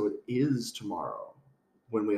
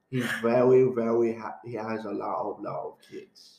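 put-on lazy, slurred, drunken-sounding Cockney accent. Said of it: "why do you sound like Russell Brand now?".

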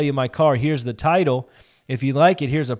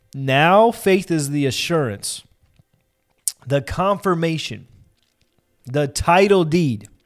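very slow, deliberate, measured word-by-word reading. Rereading a passage aloud for listeners, reading slowly on purpose. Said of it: "I'm reading it slow on purpose".

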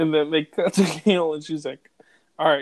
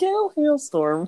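very high, fake newscaster voice; 12 semitones higher than usual. Imitating a reporter acting fake on the news: Gail Hailstorm's fake news voice. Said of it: "she acts all fake on the news".

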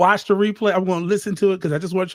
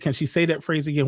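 ordinary delivery

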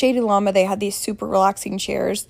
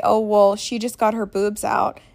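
usual speaking voice

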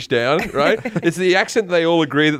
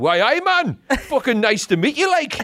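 put-on Newcastle Geordie accent, pitched up; 9 semitones higher than usual. Retelling a reply to an actor from Newcastle, in a Newcastle Geordie accent. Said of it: "Like that, right?".

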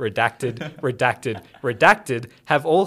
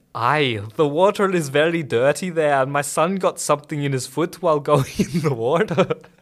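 put-on Scottish accent with heavily rolled, overdone r's. Asked to say the sentence again, the speaker repeats it in a Scottish accent. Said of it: "Say it again and do it in the Scottish accent again".

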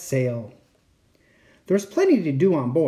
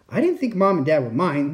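plain

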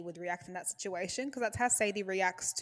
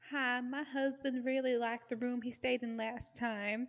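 odd, weird, put-on Southern US accent; 5 semitones higher than usual. Quoting a character's phone call: imitating a weird southern accent. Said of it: "in her weird southern accent".

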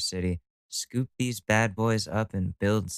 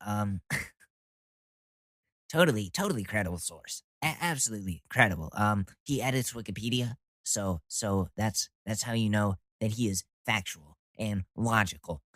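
put-on fast debater voice. Doing a mocking impression of a commentator citing statistics: Ben Shapiro impression. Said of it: "So that's my Ben Shapiro".

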